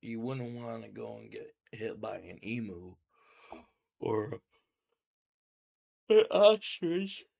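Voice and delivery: speaking through yawns. Speaker apologizes to the audience for yawning so much, talking through yawns. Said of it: "I don't know why I'm yawning so much".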